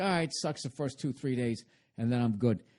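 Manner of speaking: ordinary talk, nothing marked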